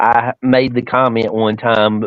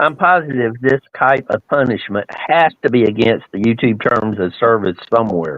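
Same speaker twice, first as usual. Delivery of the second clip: normal talking voice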